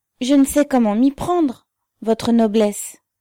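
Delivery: scared outburst, very loud and high. Narrator voicing a woman answering the officer who ordered a search, frightened. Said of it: "Elle dit d'un ton effrayé".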